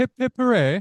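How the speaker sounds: reluctant put-on British accent, very high pitch. Challenged to try a british accent, the speaker attempts one: attempted british accent. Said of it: "You try".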